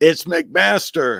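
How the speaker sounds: slow, high-pitched, loud yelling. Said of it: "he's yelling at me saying".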